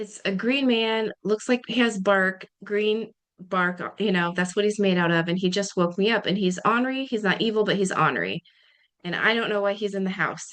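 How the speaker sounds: ordinary talk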